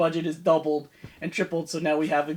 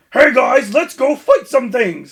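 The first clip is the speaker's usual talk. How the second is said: very loud, generic action-hero tough-guy bravado; 7 semitones higher, 12 dB louder than usual. Mocking a show's secondary character, the speaker does a generic tough guy voice. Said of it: "has the most generic tough guy voice".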